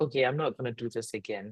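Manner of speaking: ordinary delivery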